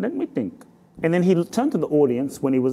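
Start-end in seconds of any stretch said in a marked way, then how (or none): 0.0-0.6 put-on Indian accent, pitched up. Retelling what a peace teacher answered before a rally: Dwarkaji's Indian accent. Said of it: "he looked at me with his Indian accent".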